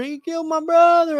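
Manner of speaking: very high, mock tearful sobbing wail. Retelling a fight, speaker quotes his opponent's brother: imitating someone crying. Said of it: "His brother's like crying".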